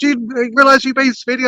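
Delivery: furious, angry shouting. Retelling being pulled over for speeding, imitating a furious policeman. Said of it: "he was just screaming at me".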